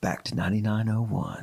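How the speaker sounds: smooth jazz radio DJ voice. Suggesting the other speaker try it, demonstrating a smooth jazz radio voice. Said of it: "you should use your smooth jazz radio voice".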